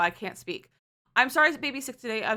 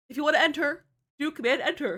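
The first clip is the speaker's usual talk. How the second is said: speaking through a yawn, higher pitch; 5 semitones higher than usual. Explaining to chat how to enter the giveaway, yawning while talking. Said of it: "I'm sorry, I'm yawning".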